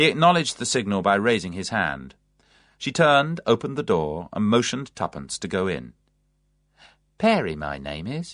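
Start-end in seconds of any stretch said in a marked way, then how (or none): 7.2-8.3 friendly, welcoming, low and unhurried. Narrator reads a woman greeting a visitor at her door, in a friendly voice. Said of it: "she said in a friendly voice".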